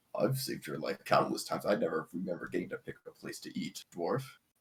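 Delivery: hushed, whispered mutter under the breath. A character leans close to a dwarf's ear, out of earshot, muttering. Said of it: "he's kind of mutters".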